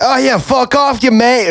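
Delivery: put-on Irish accent, attempted, pitched very high. Asked what an Irish accent sounds like, the speaker tries one: put-on Irish accent. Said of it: "an Irish accent?".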